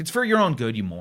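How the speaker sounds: contemptuous, scoffing put-down tone. Retelling a man standing at his table, imitating a scoffing man. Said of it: "And he scoffs".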